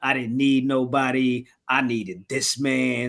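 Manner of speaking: plain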